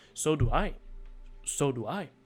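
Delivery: strange, stilted, odd intonation. Mimicking how a game character oddly said her line: imitating a character's odd line delivery. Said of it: "Why did she say it like that?".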